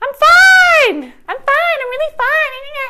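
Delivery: high-pitched tense voice. Speaker demonstrates tension in the vocal folds, high-pitched tense voice. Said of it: "not like high pitched".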